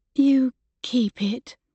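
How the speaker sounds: small, trembling voice. A woman pushes a painting back toward him, in a shaky little voice. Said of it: "she said in a shaky little voice".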